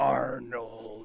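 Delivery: deep, growling movie-trailer announcer voice. Imitating a show announcer, growling 'Arnold'. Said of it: "the announcer growls it this way".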